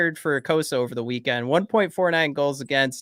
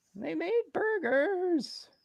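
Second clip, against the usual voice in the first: terrible cartoon voice, very high pitched; 9 dB quieter than usual. Joking about someone bringing food for everybody, in a terrible Morty impression. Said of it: "my terrible Morty impression".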